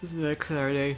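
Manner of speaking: yawning while speaking. Speaker noting the next Screenshot Saturday after skipping one, yawning while speaking. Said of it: "I was yawning through it".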